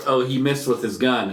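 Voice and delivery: ordinary talk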